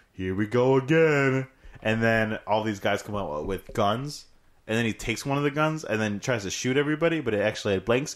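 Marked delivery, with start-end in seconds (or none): 0.2-1.5 slow, loud, drawn-out action-hero drawl. Retelling a movie scene, doing a Vin Diesel voice. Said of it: "Vin Diesel looks at the bomb, and he's like".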